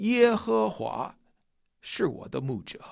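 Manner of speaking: heavy stress on the first three words, 耶和华. Reading a verse aloud, stressing its first three characters, 耶和华. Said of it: "我们强调头三个字，耶和华".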